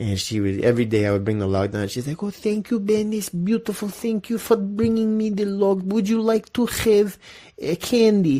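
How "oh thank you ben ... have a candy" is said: very high-pitched, put-on Romanian accent. Quoting a sweet, honest woman thanking him, in an imitated Romanian accent. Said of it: "me doing her voice".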